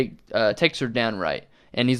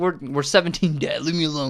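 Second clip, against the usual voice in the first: put-on yelling, pitched higher; 4 semitones higher than usual. Retelling a scene where a teen yells at his dad: imitating a character yelling. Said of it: "He just yells at his dad".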